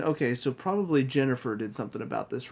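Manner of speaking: ordinary delivery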